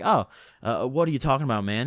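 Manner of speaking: put-on surprised tone. Retelling a traffic stop, answering the cop: retelling acting surprised. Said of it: "I acted surprised".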